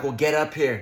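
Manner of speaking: ordinary talk, nothing marked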